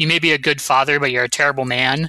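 normal talking voice

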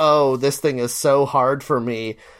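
ordinary delivery

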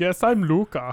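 high, loud put-on Dutch accent.

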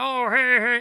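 put-on old peddler voice. Retelling the myth, voicing the disguised Odysseus: Odysseus impression. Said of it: "that's my impersonation of Odysseus".

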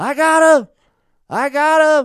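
high-pitched, shrill, full-volume yell. Telling a story about finding Oreo, re-enacting yelling across the desert: retelling a yell. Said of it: "I yell across the desert".

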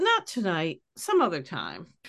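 fake condescending tone, swooping sing-song. Retelling how Jan turns down a babysitting request: imitating a condescending tone. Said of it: "she's a little condescending".

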